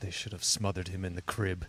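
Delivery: mock muttered aside. Retelling a line a future improv partner once said, muttered under breath. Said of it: "he just under his breath goes".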